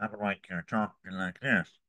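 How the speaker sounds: speaking through the nose. A trained actor demonstrating a voice that is not centered: very nasal voice. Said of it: "you end up with a very nasal voice".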